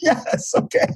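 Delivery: weary, exhausted, worn-out, resigned tone. Speaker retells people finally agreeing to the doctor's offer, imitating exhausted people. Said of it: "they just finally just were exhausted".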